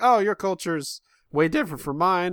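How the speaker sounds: voice cracking. Musing on how a relationship began over shared Disney songs, voice breaking. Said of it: "I don't know why my voice broke".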